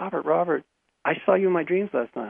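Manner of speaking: put-on voice bursting with eager excitement. Recounting a girlfriend's friend describing a dream: imitating someone excited. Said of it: "she's all excited".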